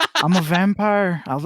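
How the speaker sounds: put-on Irish accent. Riffing on a film scene with another speaker, in a Barry Keoghan Irish accent. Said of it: "y'all just doing Irish accents".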